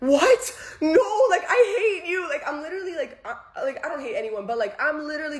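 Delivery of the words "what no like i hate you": high, loud screaming, laughing sob through tears. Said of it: "I'm going crazy".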